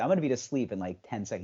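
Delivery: plain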